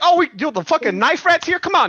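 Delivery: loud, very high, rude jeer with New York attitude. Imitating rude New Yorkers reacting to trouble: imitating rude New Yorkers. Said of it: "They'd be like".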